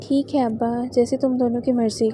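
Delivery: plain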